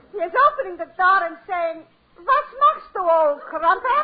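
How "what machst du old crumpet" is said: put-on English accent. Retelling what the husband says at the door: imitating Pierre's English accent. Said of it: "He is making with an English accent".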